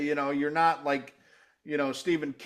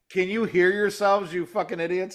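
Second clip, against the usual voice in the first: put-on scolding tone, higher pitched; 4 semitones higher, 4 dB louder than usual. Retelling what the wife said from downstairs: imitating wife scolding. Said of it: "she's like".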